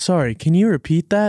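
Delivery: automated phone-assistant voice. Podcast hosts taking turns imitating a voice assistant, in a Siri voice. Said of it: "Was that a good Siri voice?".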